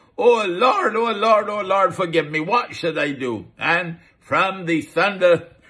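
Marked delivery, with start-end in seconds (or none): 0.2-3.5 terrified, desperate, frightened crying out. Telling the story of a frightened man on his knees, acting out a cry to the Lord. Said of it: "he cried out".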